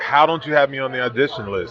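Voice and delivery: ordinary talk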